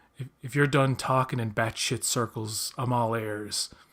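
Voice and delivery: ordinary talk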